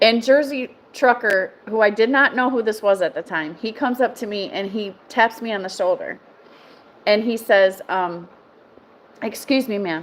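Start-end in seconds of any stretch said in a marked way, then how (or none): 9.2-10.0 deadpan serious delivery, quieter. Retelling a stranger tapping a shoulder at a truck show: imitating someone dead serious. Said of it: "he's dead serious".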